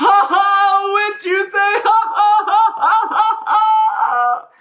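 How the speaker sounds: shrill, very loud, high, drawn-out hysterical laughter. The social worker looks at Elfie, then bursts into hysterical laughter. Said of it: "The social worker was a big lady. / then a smile crept across her face before she burst into hysterical laughter. / The social worker looked at [name] for a long while".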